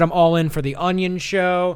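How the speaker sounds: ordinary talk, nothing marked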